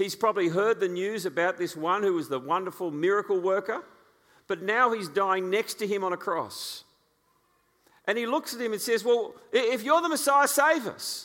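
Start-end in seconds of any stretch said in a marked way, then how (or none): 9.0-11.2 mock scornful, disbelieving, desperate jeer, raised and high. Retelling the criminal on the cross railing at Jesus, mock-scornful. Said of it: "you can just hear the scorn in his voice".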